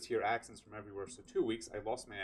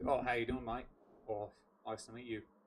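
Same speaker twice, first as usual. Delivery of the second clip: broad Western Australian accent, laid on thick. Demonstrating the accent the speaker used to have, in a thick Western Australian accent. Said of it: "pretty sure Western Australian accent".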